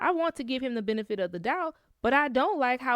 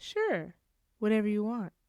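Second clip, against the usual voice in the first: put-on unsettling, creepy, loaded tone with hidden meaning; 2 semitones lower than usual. Retelling what the brother-in-law said: imitating a smirking creepy tone. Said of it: "Then he kinda smirked and said".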